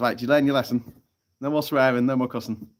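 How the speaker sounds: ordinary delivery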